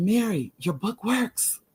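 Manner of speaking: slow, high, hushed, secretive half-whisper. Recounting a phone call, imitating someone half-whispering. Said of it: "and she's whispering".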